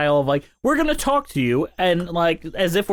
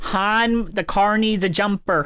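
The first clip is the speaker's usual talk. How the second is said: put-on Minnesotan accent; 3 semitones higher than usual. In a chat about regional accents, doing a quick Minnesotan accent. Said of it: "My Newfoundland accent eventually turns into Minnesotan".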